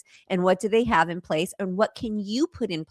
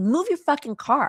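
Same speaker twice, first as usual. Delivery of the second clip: mock furious, angry and pitched up; 8 semitones higher than usual. Retelling what an angry man told her while she was on the phone: imitating an angry man. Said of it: "He's mad".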